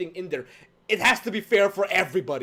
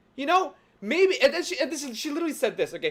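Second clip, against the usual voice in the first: ordinary talk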